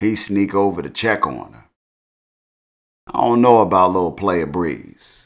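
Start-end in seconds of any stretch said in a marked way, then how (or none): none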